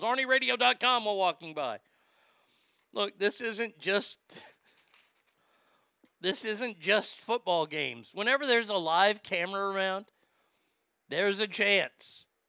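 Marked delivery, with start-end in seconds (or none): 0.0-1.0 higher, louder yelled delivery. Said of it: "would have yelled".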